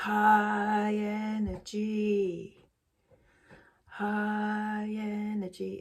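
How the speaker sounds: very slow, deadpan, fake enthusiasm. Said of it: "It's just not me".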